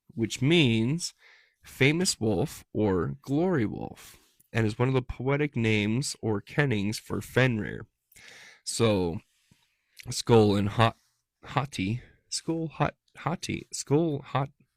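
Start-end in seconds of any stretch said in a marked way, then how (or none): 10.1-14.5 tongue-tied, tripping and stumbling over the syllables. Speaker reading out Norse wolf names, tongue-tied. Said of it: "Why is my mouth having a hard time with that?".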